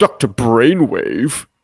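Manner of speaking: dry, scornful, mocking sarcastic tone. Acting out a villain deliberately misnaming someone: imitating Destro's sarcastic tone.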